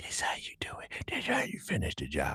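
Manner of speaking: hushed, threatening whisper. Retelling a scene where a character threatens someone: imitating someone whispering. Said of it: "She whispered".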